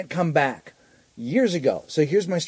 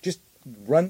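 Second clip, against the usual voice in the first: normal talking voice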